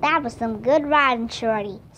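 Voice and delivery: ordinary delivery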